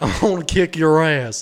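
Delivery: TV-host impression sounding like a cartoon character. Acting out a threat from the host, in a Dr. Phil impression sounding like Hank Hill. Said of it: "I know it sounds like Hank Hill".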